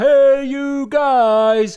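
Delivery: loud, high-pitched shouting.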